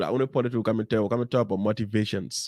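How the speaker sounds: ordinary delivery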